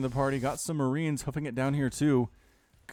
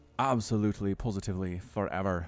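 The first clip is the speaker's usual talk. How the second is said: botched, bad Irish accent drifting Scottish, low; 6 semitones lower, 3 dB quieter than usual. Commenting on a long build time, attempted Irish accent. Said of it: "that's me trying to do like an Irish accent".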